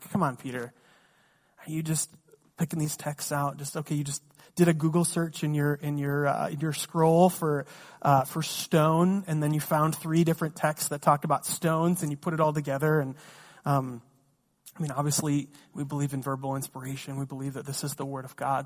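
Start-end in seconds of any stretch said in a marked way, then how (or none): none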